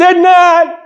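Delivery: put-on very high, shrill, loud, squabbling childish yell. Acting out two children arguing as the second one answers: retelling a child's yell. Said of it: "And the next one yelled".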